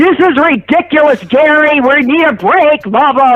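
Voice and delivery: loud, slow, angry complaining fit. Retelling how John complained about going overtime; imitating John throwing a fit. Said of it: "he'd throw a big fit".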